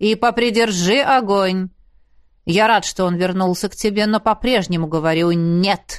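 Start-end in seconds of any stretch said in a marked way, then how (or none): none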